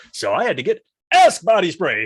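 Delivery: loud, high, comic delivery with wide pitch swings. Contrasting a deadpan delivery with a Dane Cook impression. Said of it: "a Dane Cook would be like".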